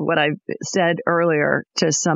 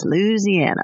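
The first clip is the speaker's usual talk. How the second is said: imitated pronunciation of Louisiana, higher; 3 semitones higher than usual. Showing how her husband says the state name: Tim's way of saying Louisiana. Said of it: "That's how my husband Tim would say it".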